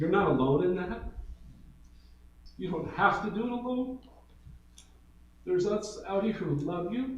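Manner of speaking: moved, heartfelt, emotional tone. Speaker addressing pastors serving in hard ministry contexts: emotional. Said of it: "I'm emotional here".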